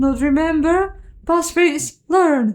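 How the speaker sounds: small, faint voice. Narrating the story, a voice answers from behind the iron door, tiny and faint. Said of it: "A tiny voice faintly behind the iron door".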